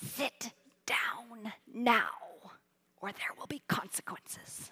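low, hushed, breathy whisper. Retelling a mother warning her fidgeting boy in church: imitating a mother whispering. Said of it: "and she whispers".

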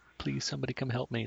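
acted, resigned, helpless, defeated tone. Describing how the captain sounds: imitating a captain pleading, given up. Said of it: "sounds like she's given up".

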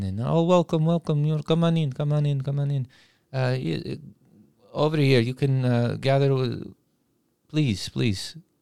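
put-on Eastern European accent. Recounting a man welcoming the group into an escape room, Eastern European accent. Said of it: "He has a very uh, Eastern European accent".

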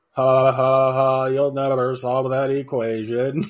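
flat, mechanical robotic monotone, very slow. Imitating a man who taunts people solving an equation: imitating a robotic voice. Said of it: "that robotic voice".

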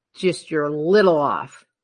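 ordinary delivery

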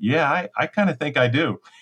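bashful, sheepish tone. Retelling Lori's answer about wanting the puppy, imitating Lori, mock-sheepish. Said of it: "she said real sheepishly".

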